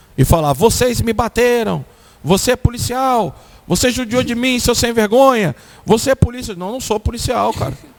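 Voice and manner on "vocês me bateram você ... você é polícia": acted, heated, contained, angry accusing rant with yelling. Retelling a street encounter, imitating a man yelling and cursing. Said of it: "ele começou a gritar no meio da praça e me xingar".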